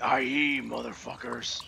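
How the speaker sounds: dropped, deep, bassy, low-pitched put-on voice. Describing a character's voice to another speaker; low-pitched voice impression. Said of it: "he has a really high pitch low pitched voice like".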